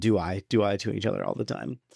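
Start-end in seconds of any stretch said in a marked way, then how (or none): none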